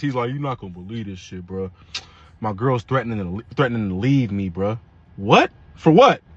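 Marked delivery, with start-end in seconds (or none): 0.3-4.8 sad, quiet, downcast, heavy-hearted lament. Retelling a friend's phone call about his girl leaving: imitating a sad friend.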